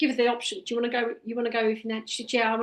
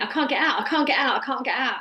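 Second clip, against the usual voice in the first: imitated screaming voice; 3 dB louder than usual. Retelling what she cried out when trapped: imitating someone screaming. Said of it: "she started screaming".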